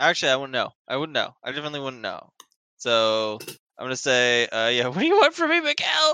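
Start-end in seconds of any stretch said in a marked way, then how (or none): 4.9-6.1 very high-pitched yell into a radio handset. Yelling into a staticky radio at a voice on the channel: yelling into a radio. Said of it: "as you just yell into your radio".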